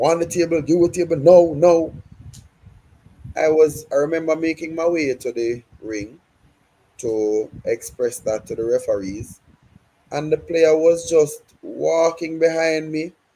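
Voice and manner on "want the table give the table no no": mock, insistent, loud, high, repeated shouting. Retelling how a player approached, imitating someone shouting. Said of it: "Shouting, shouting".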